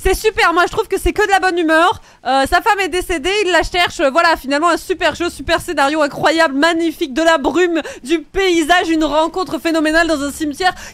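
high, loud, gushing, carried-away, fired-up excitement.

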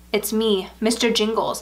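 usual speaking voice

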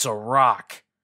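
growling voice. A companion answers the narrator's worry about a missing item, growled. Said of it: "growled Ikarax".

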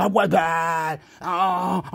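fake sobbing. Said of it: "I'm crying now".

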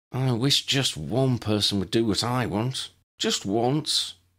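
high-pitched, sulky, petulant tone. A girl answers before being sent off to her dorm, sulking. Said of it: "Lydia sulked".

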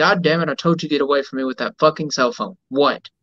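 ordinary delivery

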